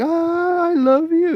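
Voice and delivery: very high, very slow, sweet, loving voice. Describing a woman's voice, imitating how some women here sound sweet. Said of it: "they have that sweet voice".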